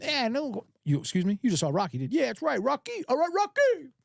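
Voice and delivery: put-on Italian character accent. Retelling a comedy bit, doing Eddie Murphy's Italian character accent. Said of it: "I'm doing Eddie Murphy doing an Italian character".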